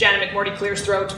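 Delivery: ordinary delivery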